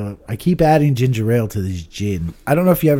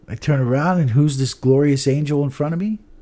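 normal talking voice

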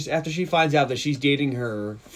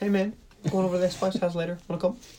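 cool, raised-pitch character voice; 5 semitones higher, 3 dB quieter than usual. Speaker redoes a man's invitation as it would sound in the Korg voice. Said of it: "if he said it in the Korg voice".

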